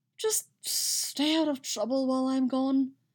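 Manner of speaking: tired, sighing delivery. A master answers his teasing Padawan while heading to the door, tired sigh. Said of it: "Obi-Wan says with a tired sigh".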